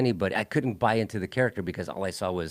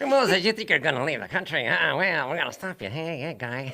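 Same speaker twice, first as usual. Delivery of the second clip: put-on high, tough-guy New York gangster accent; 6 semitones higher than usual. Recalling miscast actors in The Ten Commandments, do an Edward G. Robinson gangster voice. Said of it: "New York gangster accent".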